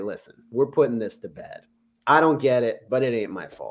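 plain

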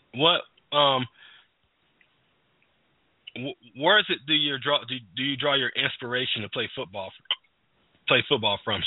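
talking with hiccups interrupting the words. Asking an interview question while having the hiccups: speaking with hiccups. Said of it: "I got the hiccups".

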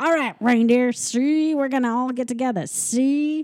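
put-on old-fashioned gangster voice. Describing a holiday special, the speaker voices Comet running the reindeer games: old-timey gangster voice. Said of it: "he sounds like an old-timey gangster because he's like".

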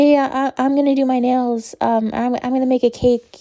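timid, hesitant shy voice, stumbling over words. Imitating Charli D'Amelio in her live streams: timid Charli D'Amelio impression.

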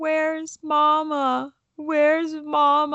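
mock very high, slow blubbering, "mama" drawn out. Retelling a contestant crying on camera for his mother: imitating Jackson crying. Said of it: "He's crying".

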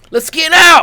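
very high, very loud, shrill exclamation. Imitating how he delivers a line in a lynch mob scene: high-pitched voice. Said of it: "He says it in such a high-pitched voice".

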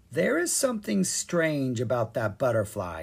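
plain

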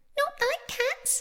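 very high, shrill, impassioned outburst. The mouse answers the girl's apology, crying out in a shrill, passionate voice. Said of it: "cried the mouse in a shrill, passionate voice".

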